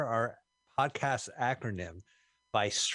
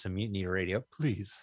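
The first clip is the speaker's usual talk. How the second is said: desperate pleading, begging voice; 3 semitones lower than usual. Podcast host asks listeners to donate, desperate pleading. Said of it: "I did that like desperate".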